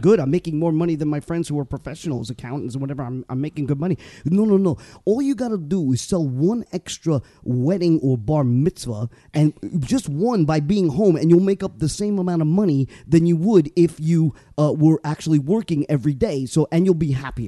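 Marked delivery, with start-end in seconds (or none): 4.2-17.5 put-on Brooklyn accent, much slower, man's voice. Acting out Carl's advice to the speaker, imitating Carl's thick Brooklyn accent. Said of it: "Carl has the biggest Brooklyn yeah, accent".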